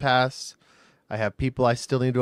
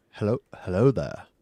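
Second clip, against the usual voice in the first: put-on British accent, pitched lower; 4 semitones lower than usual. Introducing himself to the others, attempting an Ewan McGregor impression. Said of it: "I don't have Ewan McGregor's accent".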